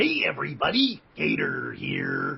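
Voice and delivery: growly cartoon voice with big, bouncy pitch swings. Speaker recalling the first mascot they voiced, doing the growly Gator voice. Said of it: "He kind of had that growly voice".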